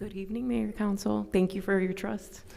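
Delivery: nervous, frightened tone. Greeting the mayor and council at a meeting, the speaker sounds scared. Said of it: "Why do you sound so scared?".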